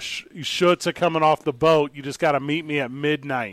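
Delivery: put-on New York harbor accent. Announcing that the new shirts are coming, in a put-on new york accent. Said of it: "That's the New Yorkie".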